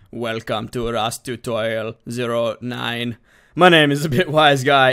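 terrible, horrific mechanical robot voice. Opening a Rust tutorial video, introducing it in a horrific robot impression. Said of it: "my horrific impression of a robot".

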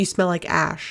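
ordinary delivery

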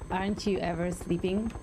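ordinary talk

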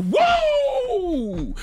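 very high, loud yelled "woo". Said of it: "and then yells".

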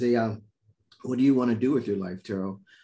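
usual speaking voice

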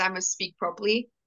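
normal talking voice

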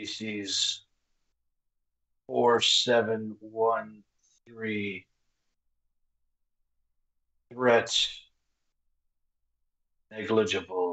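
slow, drawn-out voice spoken on the exhale. Voicing a figure who rates a species' threat level: slow, exhaled voice. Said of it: "a slow, exhaled voice".

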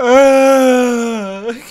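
long, very high, drawn-out crying sob. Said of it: "she was just like".

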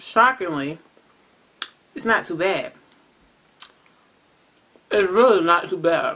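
talking while eating, mouth full. Tasting ice cream on camera for the first time: talking with mouth full. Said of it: "Excuse me for talking with my mouth open".

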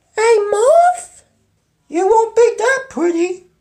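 very high, swooping animated cartoon voice. Voicing a character in a fan comic dub, fan-dub comic character voice.

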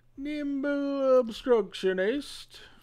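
high, put-on, botched British accent. Naming a card during a card game where every card must be said, bad British accent. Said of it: "You have to say all the cards in a British accent".

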